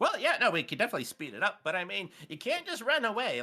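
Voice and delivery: chipper, cheerful character voice. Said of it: "he's got this very chipper walking pattern".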